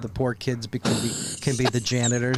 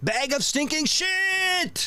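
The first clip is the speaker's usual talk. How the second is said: put-on thick German accent, higher. Retelling what an engineer at the radio station used to say: thick german accent. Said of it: "he had the thick accent".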